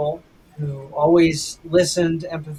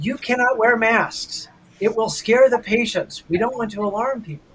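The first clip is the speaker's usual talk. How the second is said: bossy, scolding yelled voice; 6 semitones higher than usual. A nurse retells management yelling at staff, imitating management yelling. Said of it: "management came around and yelled at us".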